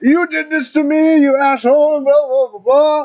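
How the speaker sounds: high, loud mock scream.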